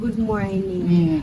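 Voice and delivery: slow, soft, overly polite tone. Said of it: "you want me to start over?".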